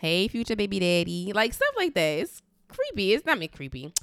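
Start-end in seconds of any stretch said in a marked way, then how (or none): none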